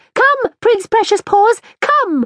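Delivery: very high calling out. A woman calls her animal back at another woman's request, crying out with a raised voice. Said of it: "she cried".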